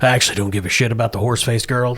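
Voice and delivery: dropped to a confiding undertone. Voicing a character who lowers his voice to confide: lowered voice. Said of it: "and he lowers his voice".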